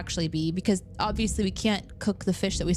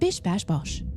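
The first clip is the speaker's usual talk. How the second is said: English-accented voice-assistant computer voice. Showing what a computer voice with slang sounds like: English Alexa voice. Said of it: "great Alexa voice".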